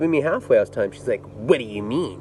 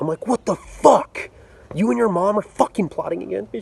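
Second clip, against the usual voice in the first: mock-furious, acted anger, much higher pitch; 8 semitones higher than usual. Retelling the reaction when she asked for a break, retelling an angry outburst. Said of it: "And I'm just so mad".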